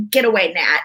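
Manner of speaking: put-on dismissive, shooing brush-off tone. Retelling how the other speaker swatted the air: imitating a dismissive brush-off. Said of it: "swatted your hand in the air as if it were Alan and you were like".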